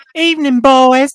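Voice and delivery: very high, very loud Southern belle voice. Trying out a voice for a female character: southern belle voice. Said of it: "I was envisioning for her a Southern belle".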